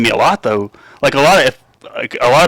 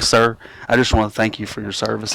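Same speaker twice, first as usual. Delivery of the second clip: put-on sincere boy voice, lower and quieter; 3 semitones lower, 7 dB quieter than usual. Retelling a little boy thanking the speaker for service: imitating a sincere boy. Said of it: "And he was so sincere".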